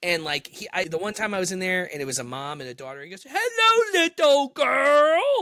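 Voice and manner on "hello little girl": very high-pitched, loud yell, stretched out. Retelling what a worker at the register said to a girl: imitating someone yelling.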